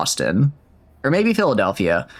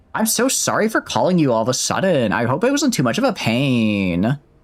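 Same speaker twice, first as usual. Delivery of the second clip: bad, swooping Valley Girl accent with drawl; 2 semitones higher than usual. Redoing Nokia's line after the original voice acting, bad Valley Girl Nokia voice. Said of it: "a man who's going to do a very poor accent".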